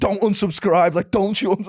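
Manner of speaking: shrill, very high-pitched, loud Scouse shouting. Retelling how a fitness influencer warns viewers off unsubscribing: imitating shouting in a scouse accent. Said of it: "with Scouse accent".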